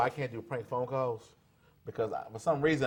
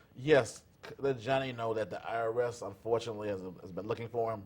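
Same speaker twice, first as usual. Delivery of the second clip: normal talking voice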